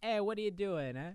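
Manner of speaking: put-on Italian American accent. Describing a dim movie character, imitating him with an Italian American accent. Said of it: "he's kind of like classic Italian American".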